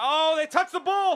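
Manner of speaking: very high, shrill, very loud screaming shriek. Commentating a football game, the announcer screams into the mic. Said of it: "I'm so sorry for screaming in the mic".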